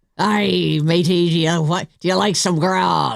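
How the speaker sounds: talking like a pirate. Marking Talk Like a Pirate Day, playing along with another speaker: pirate voice. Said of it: "Talk Like a Pirate Day".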